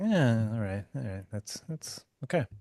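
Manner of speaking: mock relaxed, unbothered delivery. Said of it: "or are you just like".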